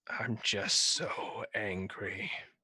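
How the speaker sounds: very slow words sighed out on a long exhale. Voicing a character whose eyes glow red: long exhale while speaking. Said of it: "long exhale breath".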